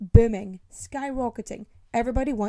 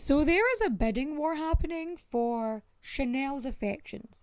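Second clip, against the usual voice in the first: plain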